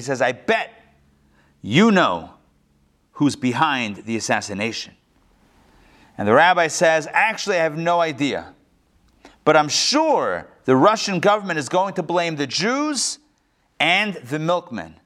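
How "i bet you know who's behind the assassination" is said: pointed, low, accusatory tone. Telling a joke about a man confronting a rabbi, in a mock-accusatory tone. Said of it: "in a very accusatory tone".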